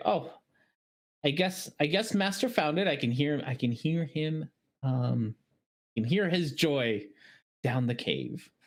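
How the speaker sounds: small, little, feminine woman's voice. A game master voices someone a player hears, in a small female voice. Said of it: "a small female voice say".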